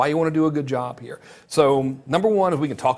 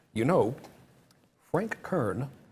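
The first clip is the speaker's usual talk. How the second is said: quieter put-on voice with over-enunciated words; 7 dB quieter than usual. Speaker tries to talk like a buddy who enunciates everything: imitating Eben's enunciation. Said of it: "I'm going to try to talk like Eben. He enunciates everything".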